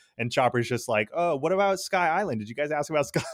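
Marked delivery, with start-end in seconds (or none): 1.2-3.3 put-on innocent voice, pitched higher. Recounting a scene where Chopper asks the others a question, put-on innocent Chopper voice. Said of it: "Chopper just innocently".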